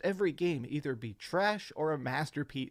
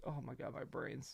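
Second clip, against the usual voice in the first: pained, much quieter, strained voice; 13 dB quieter than usual. Ending a video with a splitting headache, pained by the headache. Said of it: "I have an absolutely splitting headache".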